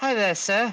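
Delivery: character voice, pitched too high. Voicing Corvin greeting a player by the fire: voice too high. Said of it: "I'm making his voice too high".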